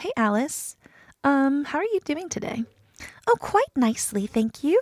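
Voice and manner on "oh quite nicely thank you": swooping, sing-song voice with wide pitch swings. Answering as the character when asked how she is: Alice voice. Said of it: "Let's see if I can get Alice's voice back".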